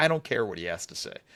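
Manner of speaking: offhand snarky brush-off. Retelling a coach's answer to a quote: imitating a dismissive, snarky reply. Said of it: "The most dismissive, snarky".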